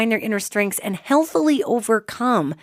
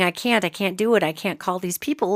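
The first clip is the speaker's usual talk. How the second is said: imitated crying, tearful voice, lower; 3 semitones lower, 4 dB quieter than usual. Retelling how a teenager cried about making phone calls: imitating someone crying. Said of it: "just crying and saying".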